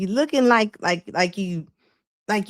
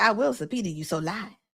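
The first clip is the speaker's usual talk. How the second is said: aggressive, threatening, squaring-up delivery; 5 dB quieter than usual. Retelling what a woman said in front of the cops: imitating someone being aggressive. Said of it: "you being all aggressive in front of the cops".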